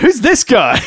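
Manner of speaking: loud, high-pitched heckling shout. Recounting heckling from the crowd while playing a heel manager, retelling a shout. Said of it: "I even shouted out going".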